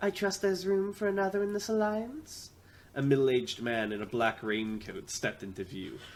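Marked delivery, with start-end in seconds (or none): 0.0-2.5 very high, gentle, soft voice. Narrator voicing a stranger speaking from a nearby rooftop, in a soft voice. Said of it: "came a soft voice".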